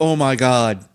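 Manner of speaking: deadpan, emotionless, machine-like AI voice. Discussing a movie, quoting Kelly's line in her deadpan AI voice. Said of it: "that deadpan A I voice".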